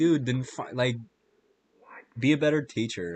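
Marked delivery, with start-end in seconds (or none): none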